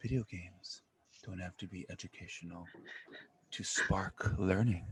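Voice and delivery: put-on public radio broadcast presenter voice. Speaker says the line with an NPR voice, an NPR announcer voice. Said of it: "I'm gonna say it with an N P R voice".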